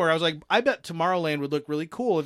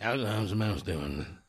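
put-on creepy old man voice, lower and quieter; 8 semitones lower, 6 dB quieter than usual. Imitating the way old guys say it: creepy old-guy voice. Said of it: "that's the way the old guys say it, and it's creepy".

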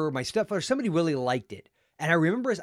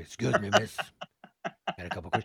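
breathy, hushed, whispered delivery; 9 semitones lower, 5 dB quieter than usual. Showing another speaker a Columbo line when asked. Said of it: "some Columbo line".

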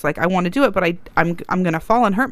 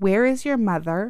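acted-out stern, parent-like tone. Showing how to demand where a misbehaving child's parent is: demonstrating a stern parental tone. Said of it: "That tone and everything".

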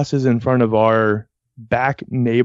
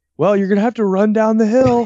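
very high, hurried, rushed shout; 10 semitones higher than usual. Retelling how Mom hurried someone who was late: imitating Mom yelling. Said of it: "so she's yelling".

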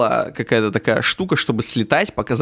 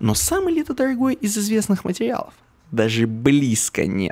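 put-on dub translator voice, high and swooping; 8 semitones higher than usual. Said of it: "переводит нам Богданыч именно таким голосом, как у Гоблина".

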